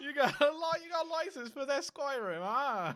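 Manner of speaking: overdone, exaggerated British accent at very high pitch. Joking about the UK, the speaker questions someone about mod licenses in a British accent bit. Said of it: "I am not joining the British accent bit".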